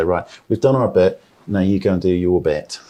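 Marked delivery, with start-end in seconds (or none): none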